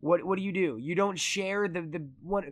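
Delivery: ordinary delivery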